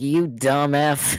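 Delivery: laughing. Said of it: "He just burst out laughing".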